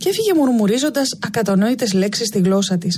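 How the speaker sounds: ordinary delivery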